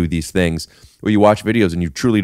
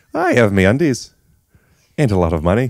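put-on Irish accent, much higher pitch; 4 semitones higher than usual. Podcast co-host making fun of Irish people on air, Irish accent. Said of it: "That's a good accent".

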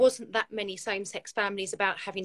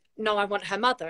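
ordinary talk

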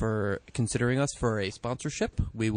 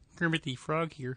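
cartoon frog voice impression; 5 semitones higher, 5 dB quieter than usual. Joking around on the show, jumping in with a Kermit the Frog impression. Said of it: "That's a pretty good Kermit".

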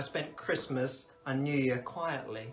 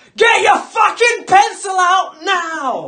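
put-on very loud, shrill, shrieked drunken yell; 19 dB louder than usual. Retelling how God shouted on the train: imitating a loud drunk shout. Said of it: "shouting in a really loud voice".

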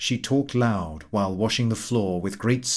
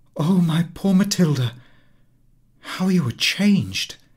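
high-pitched exclamation with a cry in it; 7 semitones higher, 4 dB louder than usual. A woman learns who the plain goodwife addressing her is, crying out. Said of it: "Her friend uttered a cry".

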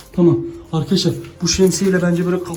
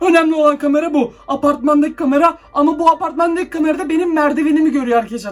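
panting, breathless, scared voice, very high; 10 semitones higher than usual. Streaming while checking the building's cameras, the speaker describes the view: breathless with fear. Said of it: "Nefes nefese kaldım yemin ediyorum".

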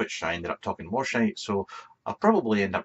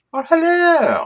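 very high, loud, put-on old nanny voice; 11 dB louder than usual. A vlogger greets his viewers, switching into his Mrs. Doubtfire voice. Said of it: "It's my Mrs. Doubtfire voice".

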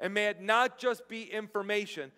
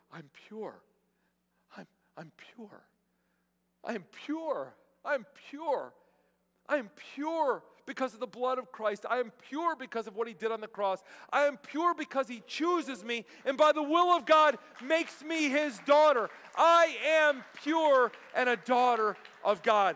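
mock overwhelmed voice, breaking down emotionally; 3 semitones higher than usual. Retelling a woman repeating scripture affirmations, imitating someone overcome with emotion. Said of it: "And she just loses it".

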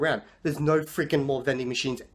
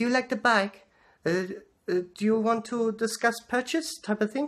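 clumsy, bad, put-on French shopkeeper voice; 7 semitones higher than usual. Retelling a shopkeeper repeatedly asking about a bike, in a bad French accent. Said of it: "I don't know how to do a French accent".

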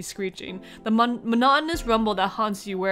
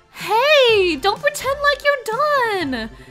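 very high, loud, fake woman's voice; 6 dB louder than usual. Reading a story aloud, the speaker voices a lady in a put-on lady voice. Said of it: "get my lady voice on".

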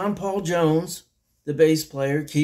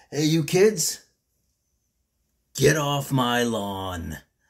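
put-on cranky, grumpy old man voice. Opening another edition of Cranky's Corner: cranky old man voice. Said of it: "the cranky old man".

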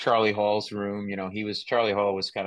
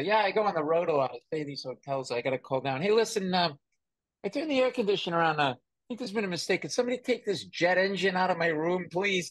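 sarcastic, high, comic voice with wide swooping pitch; 10 semitones higher than usual. Retelling a headliner's joke from early stand-up days: imitating Nick DiPaolo. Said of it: "and so sarcastic".

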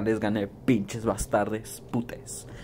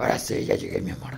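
put-on demonic voice. After announcing his voice has turned into Satan's, greeting his love: Satan voice. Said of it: "ya me cambió la voz de Satanás".

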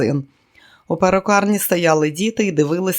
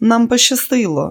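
joking, higher; 6 semitones higher, 3 dB louder than usual. Stopping by old film posters at a cinema, a woman jokes: joking. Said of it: "пожартувала [name]".

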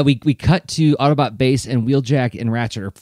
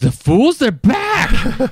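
very high, slow, swooping, startled and stunned outburst; 12 semitones higher, 3 dB louder than usual. Retelling how Shockwave reacts when the Autobots return: imitating Shockwave's surprised outburst. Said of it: "he's like".

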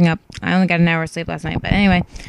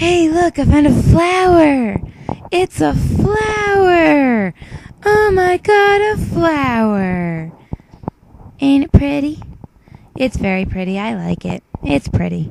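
sweet, high, swoopy sing-song, stretched "flower"; 7 semitones higher than usual. Trying out a voice for a hedgehog character, sweet male Pistol the Hedgehog voice. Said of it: "He has a male voice that's sweet".

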